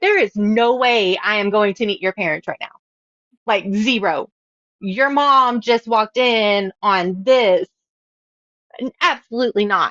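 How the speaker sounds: usual speaking voice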